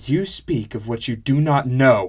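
loud, shouted outburst on the final word. Reading fiction, a woman's reply to the narrator, shouting the last word. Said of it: "She shouted the last word".

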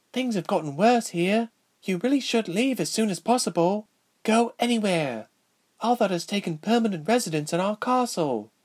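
hushed, anxious, nervous whisper. A young princess warns a returning traveler in her kingdom, whispering nervously. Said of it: "the young princess whispered nervously. / and this time whirled around to meet a pair of cloudy gray-blue eyes and silvery blue curls. She reached out to hug Princess [name] and felt much better when".

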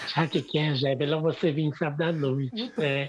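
lovely, pretty voice dropped very deep. Retelling what Viviane said on the phone: imitating Viviane's pretty voice. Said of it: "com aquela voz bonita dela".

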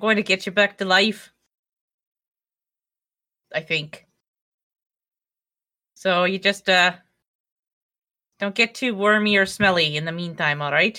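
put-on loose, odd blend of Irish and Scottish accents. In character, addressing a body they plan to bring back, weird Irish-Scottish accent. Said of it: "It's sort of a weird Irish Scottish".

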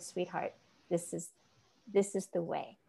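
soft, gentle, reassuring voice.

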